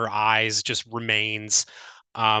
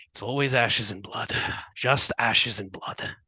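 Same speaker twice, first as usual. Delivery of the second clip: low, muttered under the breath. A storyteller voicing a fighter after a kill, muttered under her breath. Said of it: "she actually mutters under her breath".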